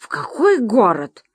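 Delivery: irritated, annoyed tone. A voice on the phone questions the narrator, irritated. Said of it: "Раздраженно".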